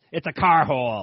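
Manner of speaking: loud cartoon-character voice. Quoting a cartoon character sneering at a guy saying garage: Moe voice. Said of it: "is what Moe said in his voice".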